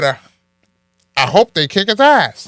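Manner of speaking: very loud, high-pitched, twangy voice.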